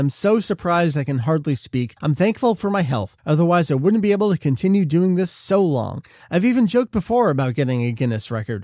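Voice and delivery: ordinary talk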